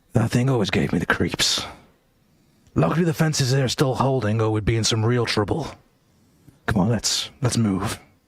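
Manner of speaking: muttering, mumbled under the breath. Reading a game's story aloud, voicing a character's line: muttered under breath. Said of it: "Callum mutters under his breath".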